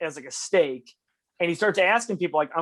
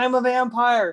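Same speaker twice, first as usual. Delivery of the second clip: high, raised, hollering yell; 7 semitones higher, 3 dB louder than usual. Retelling a filmed street scene, running down the street: imitating Nicolas Cage yelling. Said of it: "And he's yelling".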